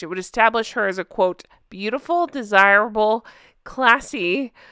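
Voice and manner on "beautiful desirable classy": words spoken while laughing throughout. Reading a quoted description aloud: laughing while reading. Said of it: "I'm laughing at that".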